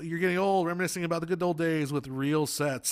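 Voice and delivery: plain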